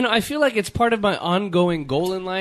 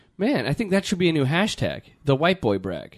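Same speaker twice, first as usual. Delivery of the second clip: normal talking voice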